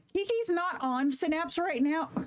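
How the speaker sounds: breaking, cracked voice, cracking up high. Updating the audience on a beta program, voice cracking. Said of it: "My voice just cracked".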